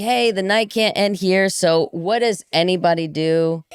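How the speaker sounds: usual speaking voice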